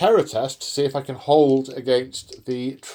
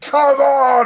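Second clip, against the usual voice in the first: very high, loud, frothing-at-the-mouth rage; 12 semitones higher, 6 dB louder than usual. Voicing the other player's unit as the stag stops: frothing at the mouth. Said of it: "You're frothing at the mouth".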